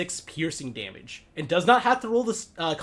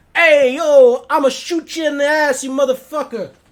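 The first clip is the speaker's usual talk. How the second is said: put-on loud, high New Yorker accent; 9 semitones higher, 12 dB louder than usual. A player voicing the character Miyagi during the game, in a New York accent. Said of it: "sounds like a New Yorker".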